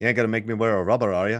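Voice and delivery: attempted Irish accent. Recalling quoting a thriller line as a ten-year-old, in an Irish accent. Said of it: "I would just try to speak in an Irish accent".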